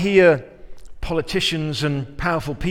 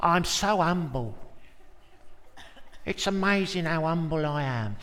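put-on gentle, obsequious Cockney accent; 7 dB quieter than usual. Acting out Uriah Heep, a Charles Dickens character: Uriah Heep Cockney voice. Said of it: "I don't know why he sounds like a Cockney".

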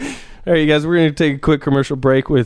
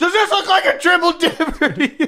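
mock very high, furious, outraged shriek. Acting out a customer at a restaurant: imitating someone screaming. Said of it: "somebody screaming that out loud".

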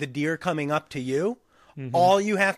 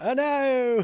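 goofy put-on Australian accent, pitched higher; 8 semitones higher than usual. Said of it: "Australian accents are fucking goofy".

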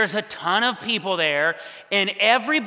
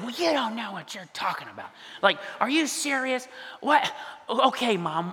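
mock unhumble, defensive and dismissive tone; 2 semitones higher, 5 dB quieter than usual. Retelling a reply to mom's criticism: imitating own defensive retort. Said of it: "not a so good way or humble way".

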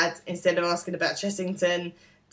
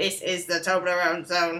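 put-on robot voice. Retelling what Andrew said to Stephen, Toblerone ad robot voice. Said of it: "says in like a robot voice".

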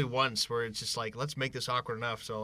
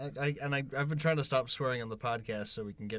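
ordinary delivery

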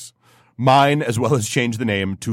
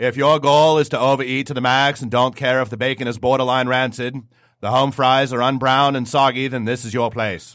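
put-on New England Bridgewater Massachusetts accent. Speaker plays Bruce from Bridgewater, Massachusetts: Bruce's Bridgewater, Massachusetts accent. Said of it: "Let me get my Bridgewater, Massachusetts accent on".

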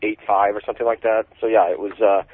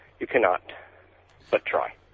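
hushed, side-of-the-mouth whispered aside; 3 semitones lower, 6 dB quieter than usual. Voicing the dog's aside after its upbeat pitch: whispering out of the side of the mouth. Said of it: "he whispers out of the side of his mouth".

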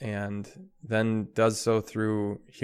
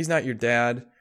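put-on children's mocking, teasing tone. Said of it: "the kids would make fun of her".

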